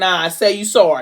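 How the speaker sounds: plain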